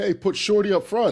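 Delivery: shrill, very high, loud yell. Retelling a photo moment when someone in the crowd called out: imitating someone yelling out. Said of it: "someone yells out".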